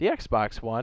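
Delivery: voice cracking. Listing the consoles the game comes out on, voice cracking. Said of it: "as my voice cracks".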